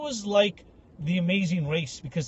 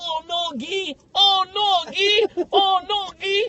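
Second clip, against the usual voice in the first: put-on French accent, very high, very slow, drawn out; 12 semitones higher, 4 dB louder than usual. Retelling what a French guy said on opening the closet: imitating a French accent. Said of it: "he's French".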